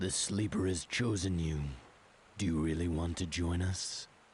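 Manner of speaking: put-on broody old man voice. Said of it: "trying to be, like, the broody old man voice".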